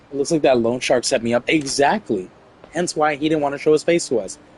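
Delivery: ordinary delivery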